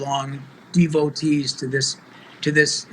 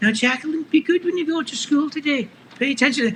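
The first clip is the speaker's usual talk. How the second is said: put-on, very high Scottish accent; 11 semitones higher than usual. A father retelling talking to his little daughter before school, in a Mrs. Doubtfire Scottish accent. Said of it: "I did that accent".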